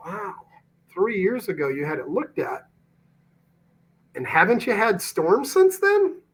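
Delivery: curious, wondering, inquisitive tone with swooping pitch. Demonstrating a questioning technique with Munif: curious, wondering tone. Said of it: "Notice the tonality, the curiosity behind it".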